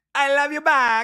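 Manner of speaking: very high, slow, drawn-out put-on Spanish accent.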